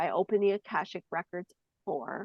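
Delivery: ordinary delivery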